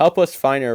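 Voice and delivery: loud shouted call. Voicing Ragnar asking for help finding her: shouting. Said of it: "Ragnar shouts".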